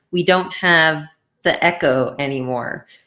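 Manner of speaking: ordinary delivery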